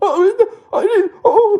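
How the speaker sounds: acted whimpering voice. Imitating confronted people backing down, imitating a whimpering voice. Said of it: "specifically whimpering in their tone of voice".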